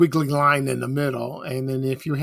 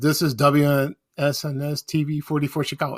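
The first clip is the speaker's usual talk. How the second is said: ordinary talk, nothing marked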